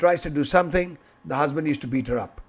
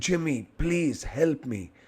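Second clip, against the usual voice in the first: put-on whisper, quieter; 5 dB quieter than usual. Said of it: "why are you talking in whispers?".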